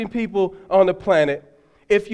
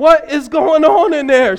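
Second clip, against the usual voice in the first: acted frightened old lady voice, alarmed and raised high; 6 semitones higher, 6 dB louder than usual. Retelling what a scared old lady in the waiting area asked, imitating a scared woman. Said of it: "She was scared".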